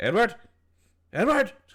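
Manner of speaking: loud high-pitched yelling. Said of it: "It's like".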